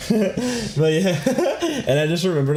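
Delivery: high, wide laughing through the words.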